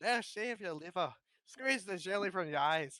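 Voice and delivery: put-on Scottish accent, storybook reading manner. Asked for a character in a Scottish accent, the speaker reads a scene: Shrek voice, Scottish accent. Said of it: "much better".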